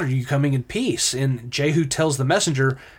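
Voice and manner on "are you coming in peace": ordinary talk, nothing marked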